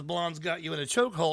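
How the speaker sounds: normal talking voice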